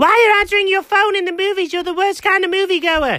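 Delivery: high, shrill yelling. On the phone with someone who answered during a movie, yelling. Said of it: "stop yelling".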